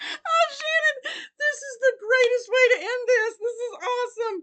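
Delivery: high-pitched, loud talk through helpless laughter. Opening a gift made by Shannon, laughing while talking. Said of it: "I'm laughing so hard I don't know if I can talk".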